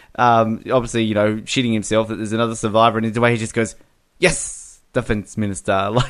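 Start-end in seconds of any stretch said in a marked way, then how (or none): 4.2-5.9 bratty, snarky, grudging, sarcastic yes. Describing a favorite film scene, quoting an actor's line, imitating a snarky reply. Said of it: "he's just so like snarky".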